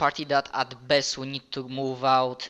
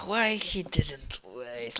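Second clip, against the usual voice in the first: quiet mumble to oneself, under the breath; 6 dB quieter than usual. Voicing a character who rubs their temples: mumbling under breath. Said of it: "mumble under my breath".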